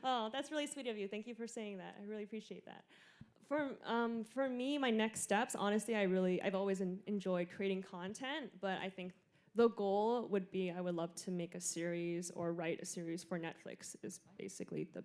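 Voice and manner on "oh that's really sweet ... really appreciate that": quick, emotional, teary, holding back tears. Thanking someone for kind words, emotional and getting teary. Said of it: "I'm so emotional. I was getting teary".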